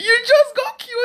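high, slow, gushing laugh-cry.

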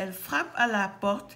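plain reading voice

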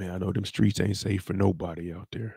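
mock whispering. Retelling how the OG talked to young Bakari the whole ride: imitating someone whispering. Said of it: "talking to him like this the whole ride".

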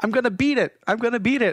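mock shrill, very high-pitched, urgent shout. Recounting a video game moment, imitating another player yelling. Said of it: "He starts yelling".

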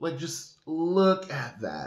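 high, loud, slow dramatic gush. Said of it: "I sound so dramatic".

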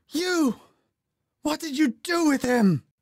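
very high, screeching, hateful, accusing shriek. Narrator reads a woman confronting another woman in the hall: shrieking. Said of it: "she shrieked".

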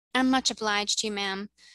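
ordinary delivery

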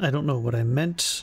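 ordinary delivery

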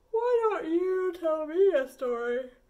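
words stretched through a yawn. Reading a bedtime story, Papa asks Chicken to tell him a story, yawning. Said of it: "said Papa. / But Chicken, said Papa, we're out of stories. / said Papa. / said Papa. / yawning".

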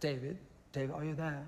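faux, put-on English accent. Retelling a phone call, quoting what she said to him: faux English accent. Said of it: "Faux English accent".

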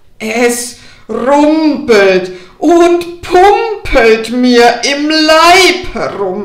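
very loud, booming, slow, coarse, rough wolf voice. Narrator reading a fairy tale; the wolf wakes feeling heavy in his belly: rough wolf voice. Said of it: "bald aber kam der Wolf vor die Haustüre und rief: ... deine Stimme aber ist rau".

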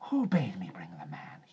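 sibilant, snake-like hissed voice. Reading the story aloud, the narrator gives a character's question, hissing. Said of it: "he hissed".

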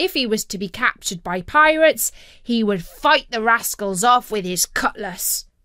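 ordinary delivery

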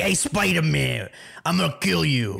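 put-on dumb-villain New York accent. Describing dumb basic villains, the speaker slips into a New York-accented Rhino voice. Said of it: "they have like a New York accent".

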